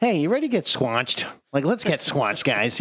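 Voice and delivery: swooping, sing-song character voice with wide pitch swings. Describing a cartoon character to another speaker, doing a Squanchy impression. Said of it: "says it just like that".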